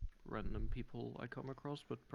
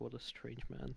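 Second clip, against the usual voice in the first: confiding aside, private tone. Speaking in character to the person at the table: said very quietly. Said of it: "just very quietly say".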